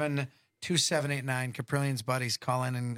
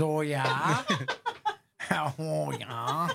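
put-on very drawn-out, stretched Wisconsin accent; 3 semitones higher than usual. Quote what she says, imitating her Wisconsin accent. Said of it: "with her Wisconsin accent".

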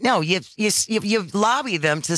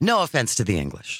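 normal talking voice

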